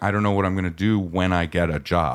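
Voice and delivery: put-on sobbing. Imagining the girl later at college's end: imitating someone crying. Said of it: "cry at the end of that going".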